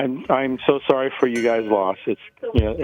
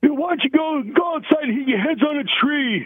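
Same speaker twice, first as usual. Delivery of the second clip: put-on angry, upset voice, higher pitch. Retelling his dad bursting in on noisy wrestling: imitating his dad upset. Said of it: "we still do his voice".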